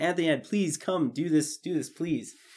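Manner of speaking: put-on pleading tone. Recounting asking someone to star, retelling a plea. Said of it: "and I pleaded to him".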